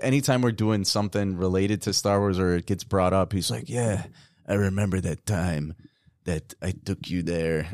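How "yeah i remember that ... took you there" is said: put-on Spanish-accented voice. Imitating their dad recalling taking his son to Star Wars: dad in Spanish accent.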